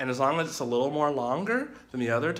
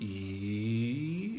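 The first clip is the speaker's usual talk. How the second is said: E drawn out, sliding from low to high; 4 semitones lower, 8 dB quieter than usual. Teaching tones to livestream viewers, demonstrating the second tone rising, held long. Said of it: "it's rising".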